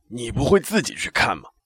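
put-on raspy, short-tempered old man. Narrator reads the bathhouse owner answering a customer's question, hoarse shout. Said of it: "用那沙哑的声音喊道".

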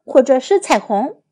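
ordinary delivery

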